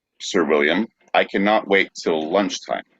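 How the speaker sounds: ordinary talk, nothing marked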